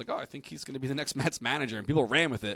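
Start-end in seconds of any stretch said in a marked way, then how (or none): 0.1-1.8 mock tongue-in-cheek, dry, sarcastic offhand tone. Retelling own past remark about teased breaking news: retelling own sarcastic remark. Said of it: "I was being sarcastic".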